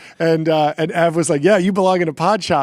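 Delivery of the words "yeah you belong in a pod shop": mocking, sarcastic, belittling tone. Retelling another person's reply: imitating Ev, sarcastic. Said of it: "he was saying it, like, sarcastically".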